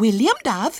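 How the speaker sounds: very high, offended, indignant tone. A girl answers Ginger's remark about William, indignant. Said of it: "she said indignantly".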